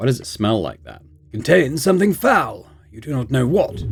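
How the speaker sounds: ordinary delivery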